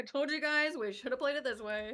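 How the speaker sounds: ordinary talk, nothing marked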